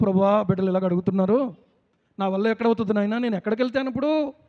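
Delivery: ordinary talk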